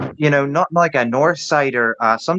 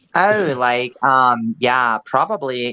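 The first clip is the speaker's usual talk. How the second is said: put-on valley girl speech. Answering a request to pull off an Orange County Valley girl: Orange County Valley girl accent. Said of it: "can you pull off an Orange County Valley girl?".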